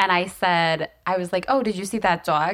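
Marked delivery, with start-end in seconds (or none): 1.5-2.5 put-on dog with New York accent. Retelling a slip after a year in New York: imitating own past New York accent. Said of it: "I've never said dog like that".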